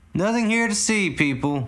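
loud, high-pitched announcer-style call. A cop addresses the gathered crowd, in a much louder announcing voice. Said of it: "announced the first cop in a much louder voice".

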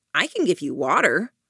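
light, playful teasing tone. Narrator reads the first-person narrator answering a request for water; teasing.

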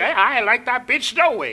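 tossed off with a brash, tough street attitude. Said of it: "she's very Jerry Springer about it".

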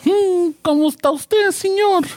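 very high, slow, overdone character voice. Doing a Spanish greeting as a character on a podcast, Tizoc voice. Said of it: "like the Tizoc voice".

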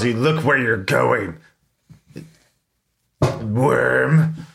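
sort of growl, "worm" stretched long. Playing a big, intimidating warrior vampire lady, the speaker growls the line. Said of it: "she just sort of growls".

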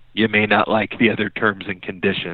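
plain

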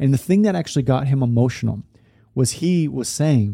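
ordinary delivery

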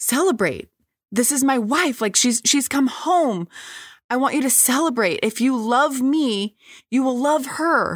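passionate near-yell. Retelling someone standing up, very emotional: imitating Jeremy almost yelling. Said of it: "he begins almost yelling".

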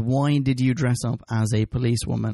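plain

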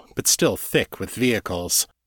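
ordinary delivery

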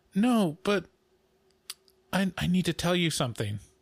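put-on little voice of a small child. Speaker retelling a child stalling when it's time to go, imitating a child's little voice. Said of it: "He's got the little voice like".

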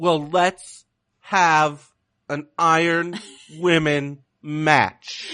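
slow put-on wrestler voice. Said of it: "You just talk real slow".

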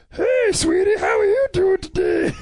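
talking appliance voice, like a food machine. Making a food replicator answer her, as she makes objects talk: voicing a talking food replicator. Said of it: "she keeps making inanimate objects talk".

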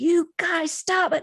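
shrill, very high-pitched yelling. Recalling their mom scolding the kids causing chaos, imitating mom yelling. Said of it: "she'd be yelling".

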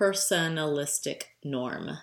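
unhurried, slow, careful and deliberate enunciation. Repeating a term said too fast last time, slowly and deliberately. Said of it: "let me say it slower".

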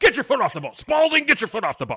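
very high, loud, swooping screaming yell. Quoting a movie line, imitating Ted Knight screaming. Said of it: "think of Ted Knight screaming".

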